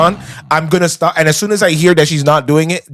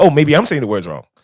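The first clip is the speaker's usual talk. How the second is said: mock lost, confused, unsure, second-guessing tone; 2 semitones lower than usual. Imitating a dj during a performance, mock confused voice. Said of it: "he sounded like".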